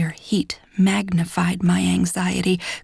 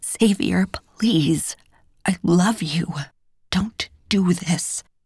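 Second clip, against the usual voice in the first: whispered, begging, pleading tone. Pinned against a door by him, begging him in a whisper. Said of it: "I begged on a whisper".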